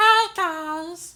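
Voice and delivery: very high, loud, squeaky puppet voice. Mimicking how the other person sounds to them, in an Elmo voice. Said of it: "That was Elmo".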